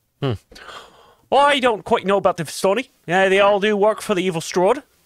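put-on New Zealand accent. Role-playing game player answering in character, New Zealand accent. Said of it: "I know I'm New Zealand now".

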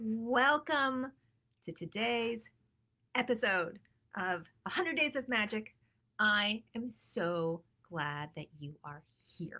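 slow, deliberate, drawn-out, unhurried delivery. A host welcoming viewers to a live episode, speaking slowly. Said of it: "I'm talking slowly".

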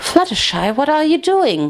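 insistent, urgent, high and swooping. Waking in the dark, the narrator pushes someone away, demanding. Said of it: "I demanded".

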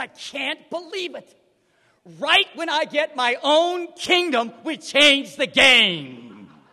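very loud, very slow put-on indignation. Recalling what a man once said to him, acting it out mock-angry. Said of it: "he said this kind of mockingly mad".

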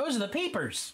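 very high grown-up parent voice. Retelling how the parents explained the frogs: imitating parents. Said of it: "That's my imitation of how that went".

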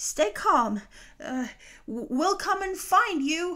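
panicked calling out. Marlin calls after Dory as she is carried away, panicked, calling out. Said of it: "a panicked Marlin called after her".

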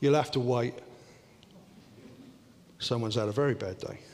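tender and gentle voice. Retelling a train trip, the speaker quotes a man who turned and spoke in a gentle voice. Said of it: "he turned to me in a gentle voice and said".

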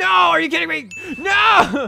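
shrill, raspy, high screaming outburst. Reacting to a bad turn in a Pokémon battle, screaming. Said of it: "I'm screaming".

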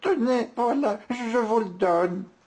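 very high, trembling, quavering stammer. Narrator reads the woman handing the wolf an éclair: trembling, stammering. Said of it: "tremblotante, lui remet l'éclair en bredouillant".

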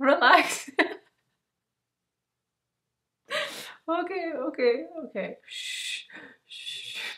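uncontrollable laughter while speaking. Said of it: "I think I'm having laugh attack".

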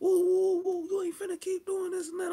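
very high, tough, woofing trash-talk voice. Retelling an argument in a woman's face, retelling tough trash talk. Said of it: "I'm woofing that".

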